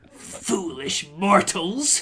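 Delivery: snarled, spiteful, hateful voice. A storyteller voices a spectral elf confronting the listeners: snarling. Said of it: "she snarls".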